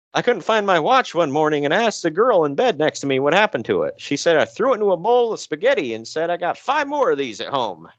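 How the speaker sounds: put-on old man voice. Telling a story in the first person, the speaker puts on an old man voice. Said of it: "Thinking of an old man voice".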